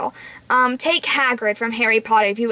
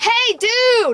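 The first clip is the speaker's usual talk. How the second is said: very loud, very high-pitched holler; 11 semitones higher than usual. Showing how someone should call across the room: called out very loudly. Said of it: "loudly is I want him to say, ... like really loudly".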